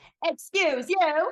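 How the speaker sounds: shrill, very loud, very high fake Southern accent. Retelling what a woman said to a frat bro, in a very false southern accent. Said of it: "she affects like a very false southern accent".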